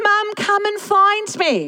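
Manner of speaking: put-on high, drawn-out child's voice yelling at full volume.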